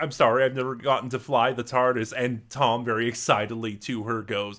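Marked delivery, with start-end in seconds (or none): none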